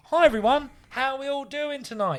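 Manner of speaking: high, rhythmic, showy comedy-club stage delivery. Showing the other speaker the rhythm of his crowd greeting: rhythmic stage greeting. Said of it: "Listen to the rhythm".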